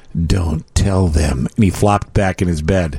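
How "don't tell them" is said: whispered, lower and slower. Retelling what a child whispered at night after staring at the wall, whispering. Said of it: "and then he whispered".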